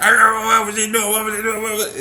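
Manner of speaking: shrill, very high, loud, angry raspy voice. Acting out how people interpret someone's words: imitating an angry raspy voice. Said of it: "they always have the most angry and raspy voice".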